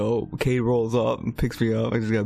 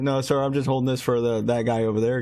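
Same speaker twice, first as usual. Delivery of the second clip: usual speaking voice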